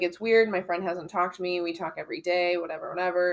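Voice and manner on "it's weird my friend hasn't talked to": plain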